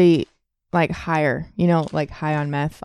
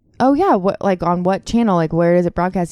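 usual speaking voice

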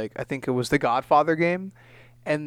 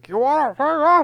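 high, loud, slurred put-on impression voice. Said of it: "really good impression of, uh, Scarface if he had that ailment".

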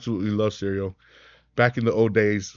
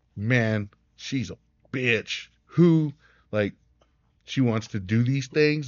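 mocking, sarcastic, put-down tone. Retelling a buddy's reply to a forwarded text: imitating a sarcastic friend. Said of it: "he was being sarcastic".

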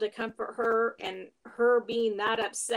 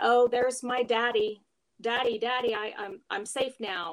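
put-on hysterical bawling and sobbing. Retelling grandma's words on seeing her husband, imitating someone bawling hysterically. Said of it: "she started bawling hysterically and said".

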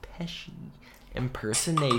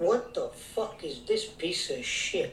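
higher put-on Italian-American tough-guy voice; 4 semitones higher than usual. Doing a Joe Pesci impression on the show. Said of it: "very Joe Pesci".

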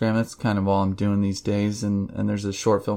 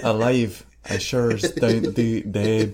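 put-on, imitated Scottish accent. Quoting a film character, scottish accent.

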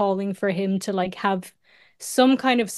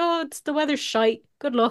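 cheery, welcoming, friendly, higher pitch; 6 semitones higher than usual. Retelling how Irish passport control greets travellers: imitating friendly Irish passport officer. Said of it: "They're always so friendly".

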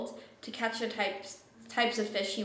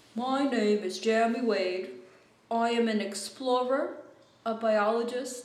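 slow, poorly faked British accent; 3 dB louder than usual. Describing a show's opening voiceover, doing it in a bad British accent. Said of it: "I have a shit British accent".

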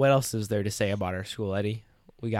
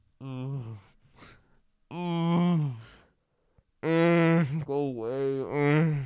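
very slow, half-asleep moans; 5 semitones higher than usual. Retelling a guy asleep in his seat: imitating someone moaning in sleep. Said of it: "he started, like, moaning".

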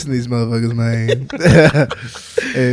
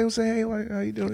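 hushed, smooth, very soft delivery; 8 semitones higher, 12 dB quieter than usual. Explaining how not to come off too crazy, demonstrating a smooth approach. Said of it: "come on a little smooth and be like".

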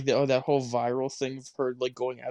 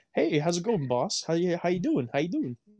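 fake customer-service voice, higher; 5 semitones higher than usual. A retail worker shows how they greet shoppers; fake retail greeting voice. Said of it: "the fake ass like retail like".

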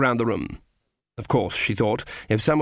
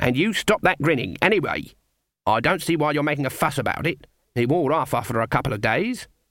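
plain

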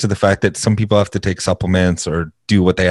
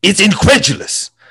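put-on hyperbolic sports pundit voice, pitched higher; 12 semitones higher than usual. Explaining who the basketball guy is: Stephen A. Smith impression. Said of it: "he's the guy that's always like".

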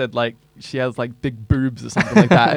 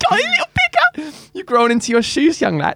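put-on grandmother voice, higher pitch. Teasing a friend about having grown: imitating a nan. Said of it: "you sound like a nan".

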